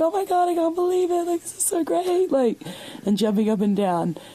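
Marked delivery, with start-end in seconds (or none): 0.0-2.3 play-acted, very high-pitched excited thrilled screaming. Recounting their reaction while standing in the store doorway, retelling excited screaming. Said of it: "So I start screaming".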